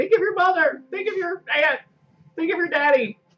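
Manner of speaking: desperate screaming. Screaming at someone across the scene to persuade them: screaming a plea. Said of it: "I'm over there screaming things like".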